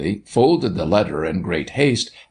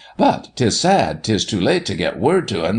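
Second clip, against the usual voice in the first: plain reading voice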